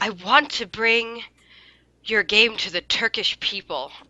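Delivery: play-acted utterly heartfelt, sincere, earnest tone. Retelling what a guy said after the game: imitating a very sincere tone. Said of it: "in the most sincere tone I've ever heard".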